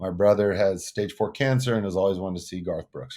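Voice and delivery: ordinary talk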